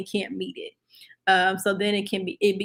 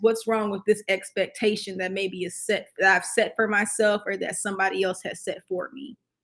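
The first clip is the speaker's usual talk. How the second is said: ordinary talk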